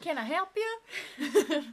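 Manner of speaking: fake Southern accent. Describing a woman who puts on a shawl and pretends to be Southern: put-on Southern accent. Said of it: "southern accent".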